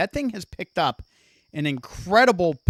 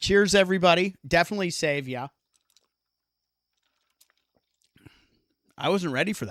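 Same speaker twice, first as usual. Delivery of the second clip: out of breath, catching breath. Streamer reloading with the team and thanking everybody, out of breath. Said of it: "I got to catch my breath".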